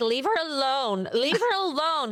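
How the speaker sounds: put-on slurred drunk American accent. Retelling what a drunk stranger said on a flight: imitating a drunk american woman. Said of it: "perfect drunk person American accent".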